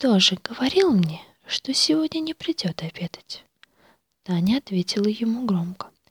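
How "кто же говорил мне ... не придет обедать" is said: secretive, hushed whisper. Kolya leans across the table to Tanya, whispering. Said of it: "произнес шепотом".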